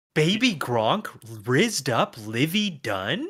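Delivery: mocking rising intonation. Repeating another speaker's meme line back, imitating it with questioning tone. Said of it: "he doesn't say it with that many question marks".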